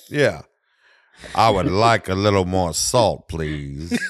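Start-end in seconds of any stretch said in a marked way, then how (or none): 1.3-4.0 low, slow, unhurried, drawn-out voice. Saying a mundane request: Morgan Freeman voice. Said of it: "do a Morgan Freeman voice really well".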